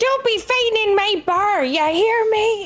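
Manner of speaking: screeching, very high-pitched screaming. Giving flavor text while hitting people in a bar fight: screaming as Medora. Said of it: "Medora's just gonna be screaming".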